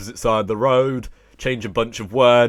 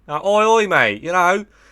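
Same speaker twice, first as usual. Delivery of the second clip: fake, higher-pitched put-on Australian accent; 8 semitones higher, 4 dB louder than usual. Explaining how americans attempting english accents end up sounding australian; fake aussie accent. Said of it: "they end up sounding like an Aussie".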